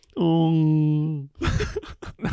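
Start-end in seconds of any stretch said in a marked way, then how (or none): 0.2-1.3 high, whale-like call. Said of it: "I just sound like a mute guy trying to speak".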